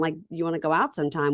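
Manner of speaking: ordinary talk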